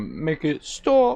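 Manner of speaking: put-on British accent. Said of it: "And I said, like".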